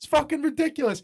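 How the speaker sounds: high, loud exasperated ranting. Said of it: "Tony's standing there going".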